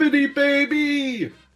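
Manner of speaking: excited sportscaster catchphrase-style voice. Answering a question about Dick Vitale's catchphrase: Dick Vitale impression. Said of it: "I just hear the tone of voice".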